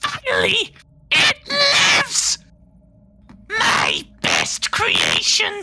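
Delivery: shrill, loud, high screech, very drawn out. The speaker voices a character, screaming out in a high-pitched screechy voice. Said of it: "this sort of high pitched screechy voice".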